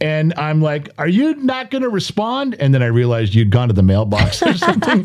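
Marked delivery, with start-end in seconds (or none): 1.0-2.5 mock irritated, loud, very high raised voice. Retelling talking loud and mad at someone who was not home: imitating own loud angry talk. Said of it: "I'm talking loud".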